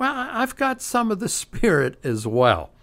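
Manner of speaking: put-on facetious tone, very high and swooping. Speaker retelling a man's reply to an arrogant church, retelling a sarcastic remark. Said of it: "he sarcastically says".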